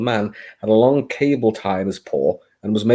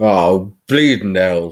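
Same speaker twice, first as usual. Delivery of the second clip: grumbled, snarling voice; 3 semitones lower, 4 dB louder than usual. A narrator reads a kitchen worker's reaction on seeing a newcomer, snarling. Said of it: "he snarled".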